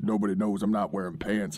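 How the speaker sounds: big bass voice, dropped very low. Retelling what Ray Scott said, in Ray Scott's big deep voice. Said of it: "with his big deep voice".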